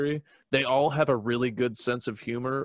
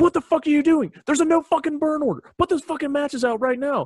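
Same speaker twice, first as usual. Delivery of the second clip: very high-pitched, furious, angry freak-out yelling; 7 dB louder than usual. Telling a story about a newly promoted superior freaking out, acting out a freak-out yell. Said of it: "freaks out".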